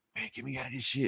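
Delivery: soft, hushed half-whisper right under the breath. Retelling a comic scene, a character calling to Peter Parker: retelling a half-whisper. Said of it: "he whispers to him".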